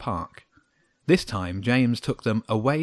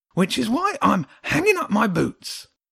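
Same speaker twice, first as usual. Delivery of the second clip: very high-pitched, ongoing ranting voice; 11 semitones higher, 4 dB louder than usual. The little hedgehog keeps ranting at James and Jenny. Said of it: "The little creature went on ranting".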